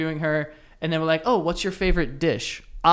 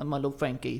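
quieter mock baby-talk voice; 3 semitones lower, 8 dB quieter than usual. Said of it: "he was very, like, baby talk".

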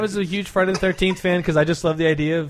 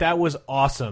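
ordinary talk, nothing marked

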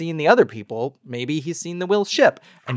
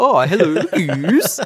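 loud, cartoonish, hammed-up, put-on Swedish accent; 4 semitones higher, 5 dB louder than usual. Speaker settling on the name Goose greets it: Swedish Chef voice. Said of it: "say it kind of like the Swedish chef from the Muppets".

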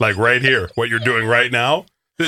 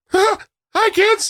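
cartoon mouse voice, much higher. Trading cartoon character voices, one asks for Mickey Mouse: Mickey Mouse voice. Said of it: "Can you do a Mickey Mouse?".

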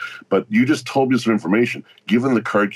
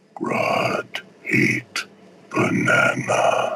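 put-on voice, almost whispered, very close to mic. Describing going right up to the mic, near-whispered Grodd voice. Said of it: "It's almost whispered".

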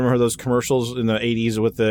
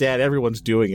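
ordinary talk, nothing marked

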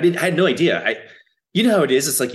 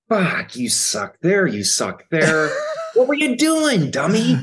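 fierce, intense, swooping rant with pitch raised; 6 semitones higher than usual. Imitating the actor criticizing his old clips: intense self-critical Vincent D'Onofrio. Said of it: "And intensely, intensely".

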